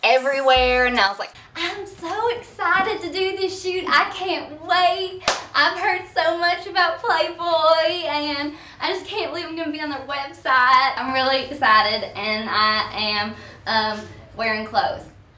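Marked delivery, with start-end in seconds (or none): 1.5-15.0 put-on, childlike, pitched-up Southern accent. Speaker retelling what she said before a playboy shoot, in a southern impression. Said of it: "I do like a Southern impression".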